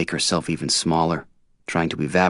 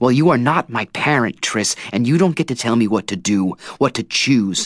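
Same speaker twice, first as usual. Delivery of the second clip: high, furious, angry shouting; 7 semitones higher, 4 dB louder than usual. A character confronts Triss after being punished by her, shouting angrily. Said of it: "I'm shouting now".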